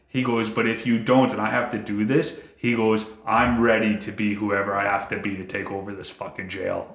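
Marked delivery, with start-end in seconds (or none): 3.2-6.9 put-on dead-serious, earnest tone. Retelling what a man said he prayed before jail, retelling a dead-serious vow. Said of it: "the guy doesn't say it to sound cool".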